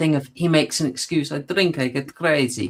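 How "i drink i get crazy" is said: put-on Georgian accent. Quoting a character's excuse while discussing a scene: Georgian accent. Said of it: "That's the best Georgian accent".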